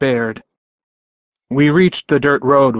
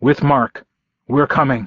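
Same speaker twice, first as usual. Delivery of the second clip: usual speaking voice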